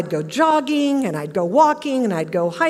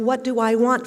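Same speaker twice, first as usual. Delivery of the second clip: ordinary talk, nothing marked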